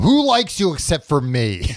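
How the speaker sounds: play-acted, full-on, repeated high swooping yell. Retelling a film scene in a jail cell, imitating Lancaster yelling. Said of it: "Lancaster keeps yelling at him".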